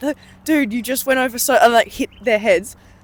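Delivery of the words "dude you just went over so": shouted, aggrieved, complaining voice. Retelling how passengers in the back seat reacted: imitating passengers yelling. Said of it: "I just hear yelling from the back seat".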